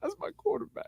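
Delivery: put-on tearful coach voice. Mocking a coach in tears at a press conference: imitating Portillo crying. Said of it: "in tears behind sunglasses going".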